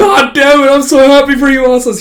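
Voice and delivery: very high, loud, tearful bawling wail. Retelling a master's words to the apprentice: imitating someone bawling. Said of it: "He also just starts bawling".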